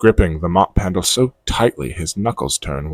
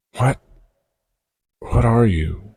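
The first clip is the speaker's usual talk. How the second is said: barely a whisper, under the breath, much higher; 5 semitones higher than usual. Narrator reading a night-shift worker's question to an unseen presence, barely a whisper. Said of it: "He continues his night shift at the lab, mop in hand, trying to convince himself that everything is the same. / He mutters under his breath, / He mutters under his breath".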